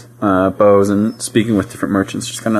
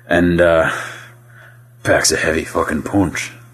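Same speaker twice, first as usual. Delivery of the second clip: gruff dwarf voice, lower; 4 semitones lower than usual. Voicing a dwarf selling a maul to a player: gruff dwarf voice. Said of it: "gets real gruff in your face and says".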